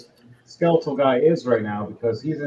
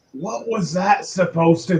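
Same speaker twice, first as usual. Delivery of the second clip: bewildered, dazed, confused giant worm monster voice; 5 semitones higher than usual. Voicing a wounded giant worm reacting to the players: confused giant worm voice. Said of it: "it looks at you going".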